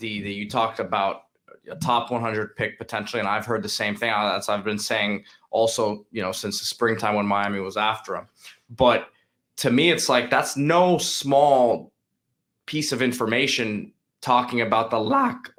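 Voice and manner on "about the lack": sudden voice break on the word lack. Speaker mid-sentence, then apologizes for his voice crack: voice crack. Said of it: "I had a D-Money voice crack there".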